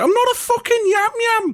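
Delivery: irritated, very high voice-cracking outburst. Quoting a coworker from Birmingham you used to tease: imitating a cracking voice. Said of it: "a massive voice break and him going".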